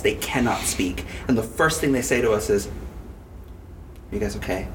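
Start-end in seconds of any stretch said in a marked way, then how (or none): 2.7-4.7 hushed, very quiet, utterly still whisper. Retelling friends' first words to them after a movie, really still, quiet voice. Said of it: "In like a really still, quiet voice".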